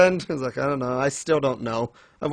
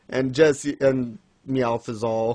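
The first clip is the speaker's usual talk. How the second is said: plain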